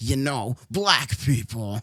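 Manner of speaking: slow, doubled voice, like two voices at once. Reading a line aloud again, this time in Vegito double voice. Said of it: "You know how the fusions have the double voices?".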